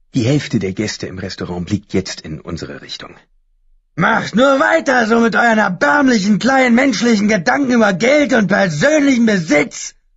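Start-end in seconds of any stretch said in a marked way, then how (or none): 3.9-9.9 very high-pitched, railing, ranting shout. Narrator reads a character yelling at restaurant guests, shouting.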